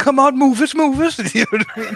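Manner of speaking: put-on incredibly thick, very high, loud Irish accent. Once the balaclava goes on, speaking in an incredibly thick Irish accent. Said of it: "Getting an incredibly thick Irish accent".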